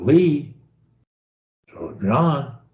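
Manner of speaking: very soft voice, almost a whisper. Showing how to say short linking words softly: almost whispering. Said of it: "I'm almost whispering them".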